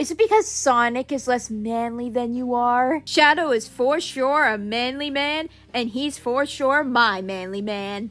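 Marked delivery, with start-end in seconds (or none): 0.0-3.0 smug tone. Retelling how Shadow answered a question: imitating a smug remark. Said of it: "Shadow just smugly adds".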